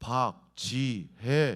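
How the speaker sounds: deep, heavy, loud male voice calling out. Retelling a voice heard from behind while washing dishes, deep male voice. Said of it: "굵직한 남자 목소리로 박지혜 이렇게 부르는 소리".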